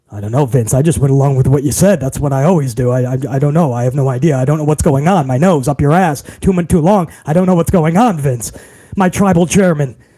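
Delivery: very deep, low, official-sounding put-on voice. Playing the son-in-law answering the boss: deeper voice to sound official. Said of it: "with my deeper voice to sound more official".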